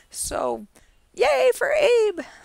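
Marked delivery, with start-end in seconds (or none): 1.1-2.2 strained, shrill, worn-out, very high, very slow rasp. Announcing the official Stewart's Cup Classic winner late in the night: shrill, worn-out voice. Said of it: "I sound shrill because my voice is so far gone".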